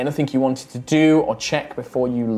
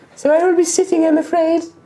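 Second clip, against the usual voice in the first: very high-pitched, put-on character voice; 4 dB louder than usual. Playing a character who refuses to walk the distance: high-pitched character voice. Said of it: "this is about as high as I can make it".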